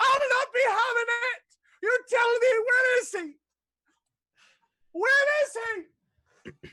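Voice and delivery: put-on very high, shrill, enraged old-woman screaming. Narrating a scene, the game master voices Doris, a furious old dwarf woman, screaming. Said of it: "a furious old woman".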